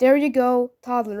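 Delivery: normal talking voice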